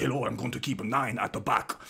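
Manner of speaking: put-on Russian-style Eastern European accent. Imagining an aussie footballer sounding foreign, in an eastern european or russian accent. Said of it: "sounded like Eastern European or Russian".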